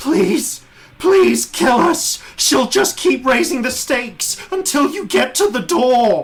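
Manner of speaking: plaintive scream. Narrating a game, a voice screams from inside the screen to the players: plaintive scream. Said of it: "you hear a plaintive voice scream".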